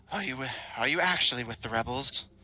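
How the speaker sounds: rough yet pleasant-sounding somber voice. A woman looks the listener over and asks a question, somber, rough but pleasant voice. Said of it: "somber, rough but pleasant sounding voice".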